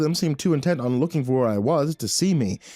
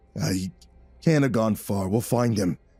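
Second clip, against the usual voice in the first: low, raspy, gravelly voice; 6 semitones lower than usual. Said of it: "said the gravelly voice".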